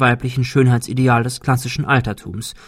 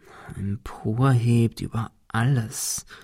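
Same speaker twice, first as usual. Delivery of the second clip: soft murmur under the breath, half to oneself; 6 dB quieter than usual. Ben repeats words from the poem to himself, murmuring. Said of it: "murmelte Ben".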